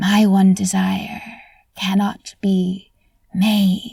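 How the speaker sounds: slow, throaty, hissed voice. Telling a tale to an audience, voicing Death: hissing from the back of the throat. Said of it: "hiss my next words".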